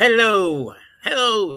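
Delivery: put-on old-time newsreel announcer voice. Showing how people talked in old movies and news: Walter Winchell voice. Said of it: "they're all impersonating Walter Winchell".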